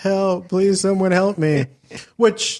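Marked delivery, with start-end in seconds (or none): 0.0-1.7 mock sobbing, high, begging cry. Retelling how a man in a cast cried, imitating him crying for help. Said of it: "he cries like a little bitch".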